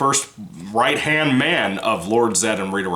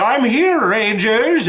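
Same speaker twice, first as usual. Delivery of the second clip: very high, loud, frog-like voice; 12 semitones higher, 5 dB louder than usual. Describing the Power Rangers character who hands out ninja powers, in a Ninjor voice. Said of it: "he talks like this".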